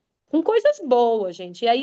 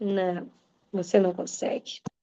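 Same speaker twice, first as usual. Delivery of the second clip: quiet, low private voice. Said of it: "ele grita".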